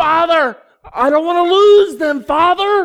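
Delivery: impassioned, very loud, high-pitched yell. Praying aloud before listeners, the speaker addresses the father: yelling. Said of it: "I'm sorry I'm yelling".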